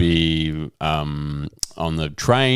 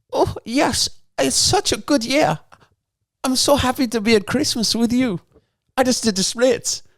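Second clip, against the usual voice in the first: very high, put-on attempted Swedish accent. Playing one of two sisters in an improvised christmas scene, attempted swedish accent. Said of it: "the Swedish accent is really gonna throw me".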